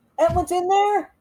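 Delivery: calling loudly. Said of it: "I'm just gonna yell out".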